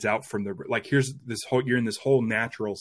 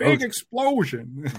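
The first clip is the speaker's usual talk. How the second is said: very high, called-out voice; 11 semitones higher, 4 dB louder than usual. Retelling a director's on-set direction: Irvin Kershner impression. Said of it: "everyone has a good Irvin Kershner impression".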